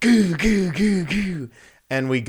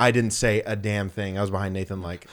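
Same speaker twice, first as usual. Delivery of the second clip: ordinary delivery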